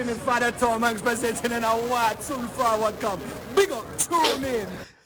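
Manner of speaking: fake Jamaican accent with showy patter. Presenting on a red carpet in a put-on Jamaican accent. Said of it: "He does Jamaican accent on the red carpet".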